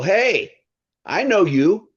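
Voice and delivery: put-on strong New York accent, pitched way up, drawn out. Retelling a stranger greeting him at a hotel, very New York voice. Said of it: "I hear this very New York voice go".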